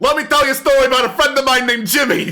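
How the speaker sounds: very high-pitched, thick, heavy New Jersey drawl. Imagining a mural coming to life and talking, in a thick Jersey accent. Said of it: "this thick Jersey accent".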